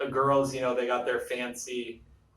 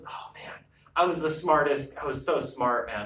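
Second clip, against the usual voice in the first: ordinary delivery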